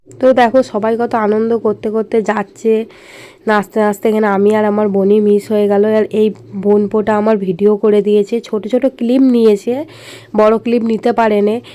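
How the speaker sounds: quiet, rough hoarse voice. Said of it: "আমার গলা শুনে তোমরা বুঝতেই পারছো, আমার প্রচুর ঠান্ডা লেগেছে".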